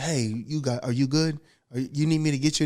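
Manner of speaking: mock-caring, concerned voice. Speaker retells how his intense coach checked on him afterwards, imitating a caring coach. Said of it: "he would love on you like you would not believe".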